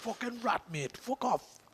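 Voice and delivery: slow put-on Geordie accent. Retelling what was said to the dog: imitating a Geordie accent. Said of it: "talking to a Geordie accent for the last two days".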